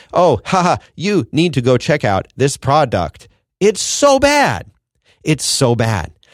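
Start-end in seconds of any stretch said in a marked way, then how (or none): 0.1-3.2 put-on scripted ad-reading voice. Speaker mocking sports figures doing ad reads, imitating a scripted ad read. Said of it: "it sounds like they are reading from a script".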